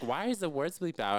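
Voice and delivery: ordinary talk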